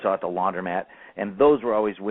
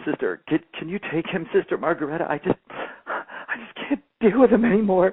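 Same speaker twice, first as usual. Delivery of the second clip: play-acted halting, weeping, pleading voice, very high; 10 semitones higher than usual. Retelling what a crying nun said to another teacher: imitating a crying nun. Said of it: "The nun is crying".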